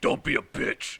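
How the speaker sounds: commanding, bossy character voice. Recounting what happened, the speaker quotes the boss in a Croak Chief voice. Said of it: "Croak Chief goes".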